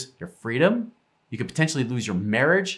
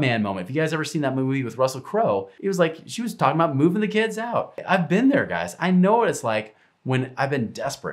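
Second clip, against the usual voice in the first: ordinary delivery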